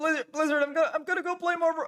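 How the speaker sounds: very high, squeezed-out cartoon voice. Speaker tries out a cartoon voice when asked, Morty voice. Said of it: "In my Morty voice?".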